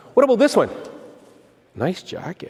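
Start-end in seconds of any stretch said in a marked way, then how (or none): 1.8-2.6 flirtatious come-on tone, quieter. Complimenting a listener's jacket as a demonstration: flirtatious tone. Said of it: "I just went from liking John's jacket to liking John".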